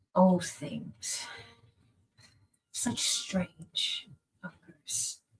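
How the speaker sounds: muttering under the breath. As the visitors turn to leave, the man mutters to himself, muttering under his breath. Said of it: "you hear him mutter under his breath".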